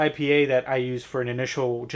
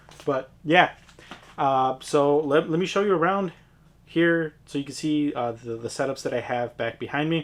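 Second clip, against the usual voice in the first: ordinary talk, nothing marked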